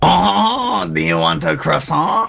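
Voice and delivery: put-on clichéd French accent with long oh sound. The speaker shows off a French accent to the others; stereotypical French accent. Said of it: "I do the French accent pretty good".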